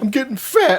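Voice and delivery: high, tearful, weepy, upset crying voice. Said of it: "she called me one time crying".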